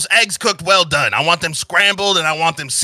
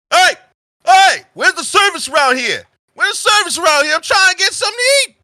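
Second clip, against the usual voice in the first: very loud, very high, rowdy hollering; 13 semitones higher, 4 dB louder than usual. Storyteller voices a rowdy table of bar patrons demanding service, very loud rowdy patrons. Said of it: "and they're all they're very loud".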